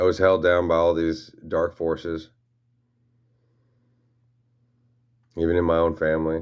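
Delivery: voice catching with emotion. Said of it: "'Cause I'm choking up".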